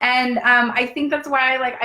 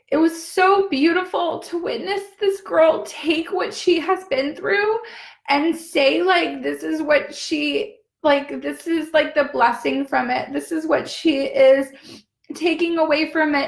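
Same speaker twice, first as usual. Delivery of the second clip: heavy crying while talking, much higher; 5 semitones higher than usual. Speaker recounts witnessing a girl's story, ugly crying while talking. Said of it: "I'm going into ugly cry".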